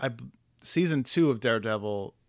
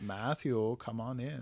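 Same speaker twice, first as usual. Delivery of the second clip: soft, playful, inviting villainess voice; 8 dB quieter than usual. Describing a comic-book woman calling to Matt Murdock, imitating her line. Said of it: "I'm sorry if my impression".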